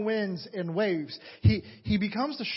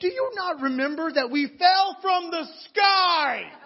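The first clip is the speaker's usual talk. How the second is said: boisterous, loud dramatic delivery, higher and louder; 8 semitones higher, 6 dB louder than usual. Asking whether the trip is forgotten: boisterous, dramatic voice. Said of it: "I have a boisterous voice sometimes".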